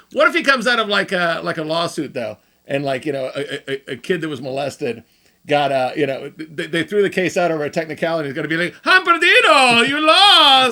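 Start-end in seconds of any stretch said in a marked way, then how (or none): 8.8-10.7 slow, loud put-on Italian accent. Joking about what the Pope might say after a lawsuit, in an Italian accent. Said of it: "What was that accent you're in?".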